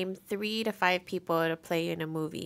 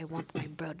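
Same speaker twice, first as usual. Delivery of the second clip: blunt, forceful delivery in a movie-actor style voice; 2 semitones lower, 8 dB quieter than usual. Retelling a scene from Iron Man two: imitating Mickey Rourke. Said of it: "he's like".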